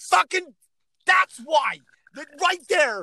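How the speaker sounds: put-on very high, shrill, loud screaming rant. Recounting watching a show, the speaker reenacts screaming at the television. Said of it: "I'm screaming at the television going".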